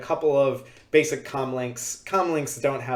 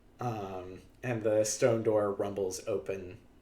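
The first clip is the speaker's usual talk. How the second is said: plain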